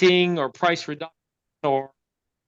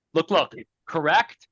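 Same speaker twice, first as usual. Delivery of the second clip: normal talking voice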